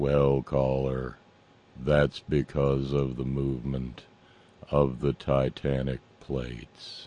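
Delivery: very low, droning, level, flat monotone. Mocking a host answering a caller, the speaker imitates Steve's monotone. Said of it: "Steve monotonously replied".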